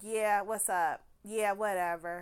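mock dismissive delivery. Retelling someone answering a taunting call: imitating a dismissive reply. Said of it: "blowing it off".

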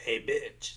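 croaking, croaky frog voice. Retelling how someone called out to the speaker at night, imitating a frog voice. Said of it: "And the frog voice".

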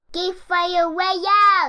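big, loud yelling shout. Shouting the show's name again after being asked to say it loud: loud shout. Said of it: "Say Geek Father real loud".

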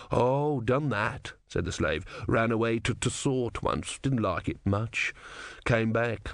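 ordinary delivery

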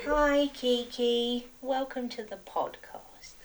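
high, cutesy pet voice. Podcast host greets the cat that just head-booped them, in an annoying animal voice. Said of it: "it's that annoying animal voice".

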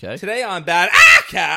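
very loud, shrill, put-on screaming. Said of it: "please stop screaming like that".

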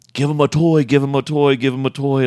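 play-acted, high yelling, repeated over and over. Retelling how the decoy yelled instructions, imitating someone yelling. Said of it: "the decoy just starts yelling".

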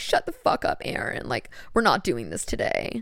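whispered, fed-up and annoyed. Retelling how a friend shut down brain talk: imitating Katrina. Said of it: "I do love to make her sound like that".

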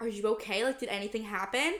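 ordinary talk, nothing marked

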